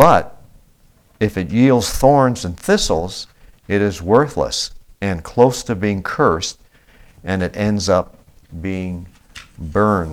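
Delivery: slow reading with long pauses between words. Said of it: "uh, slowly".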